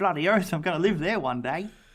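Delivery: put-on Australian accent, acted out. Two speakers acting out a man seeing a mansion, in a put-on australian accent. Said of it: "I don't know why we're putting on this accent".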